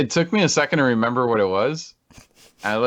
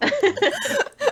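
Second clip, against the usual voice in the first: very high, laughing, excited squeal of hype. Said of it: "third repeat, even higher, laughing".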